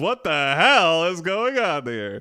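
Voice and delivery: mild hollering devil voice. The devil comes running up to you in a frozen-over hell, yelling. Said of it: "The devil yells".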